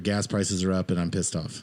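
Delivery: normal talking voice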